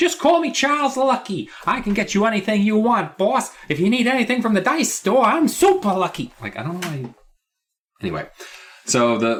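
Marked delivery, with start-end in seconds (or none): 0.0-6.3 cheeky little rascal voice, very high. Retelling a book scene, acting out the boy's reply: little rascal voice. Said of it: "like a rascal, a little rascal".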